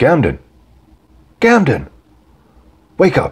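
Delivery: urgent, very high, swooping, swinging shout. Akam standing over drugged Gamden after slapping him; shouting. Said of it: "and shouted".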